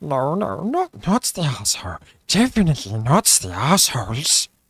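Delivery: cave creature character voice. Pitching an idea, doing a Gollum voice. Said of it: "depends if you get Smeagol or Gollum".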